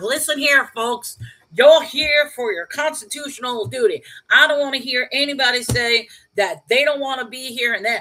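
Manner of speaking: put-on loud, thick, heavy-duty Texan accent. Retelling a man with a gavel addressing people, thick texan accent. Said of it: "thick Texan accent".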